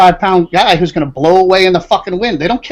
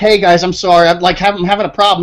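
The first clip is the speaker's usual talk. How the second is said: ordinary talk, nothing marked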